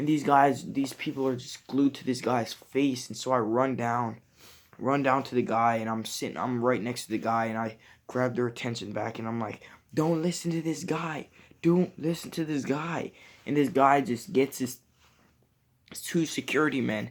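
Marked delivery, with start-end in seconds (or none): 9.9-13.1 mock insistent repeated cry, high and pressing. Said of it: "I yelled and I was like".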